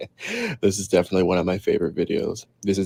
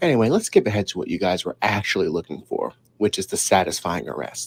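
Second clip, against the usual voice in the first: ordinary talk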